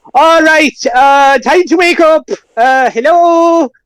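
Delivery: loud, very high, very slow drawn-out shouting. Voicing Flynn barricaded inside, calling to the rest of the building: shouting into the building.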